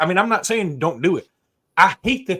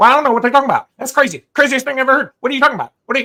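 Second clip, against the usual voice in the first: fast, loud, high-pitched rattled-off talk; 9 semitones higher, 7 dB louder than usual. Mocking a coach who is hard to listen to on the radio: Jimbo Fisher impression. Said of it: "He talks like this and he goes like this".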